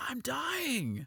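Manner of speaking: put-on very high, desperate, panicked scream. Retelling a scene, the speaker imitates Mr. Orange's panicked scream. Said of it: "he screams this really panicked and and desperate scream".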